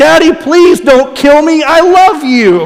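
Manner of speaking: acted, very high, drawn-out, pleading child's scream. Retelling a child screaming out in a restaurant: imitating a child screaming. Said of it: "kid screams out".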